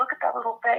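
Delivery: tearful, crying voice. Reacting to a baby's picture on the screen, crying while talking. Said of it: "I'm crying right now".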